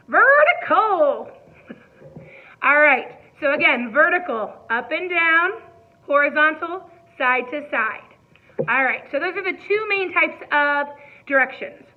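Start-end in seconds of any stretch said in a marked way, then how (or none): 0.1-1.3 loud, pitched-up, put-on country twang. Saying a word in several different voices for listeners, now in a country accent. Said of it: "let's say it like we're country".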